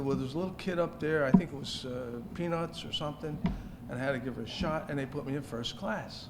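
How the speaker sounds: ordinary delivery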